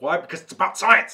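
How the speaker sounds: loud, worked-up, charged, fired-up burst. Speaker introduces a topic that always gets them fired up; fired up. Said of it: "See, I'm already going".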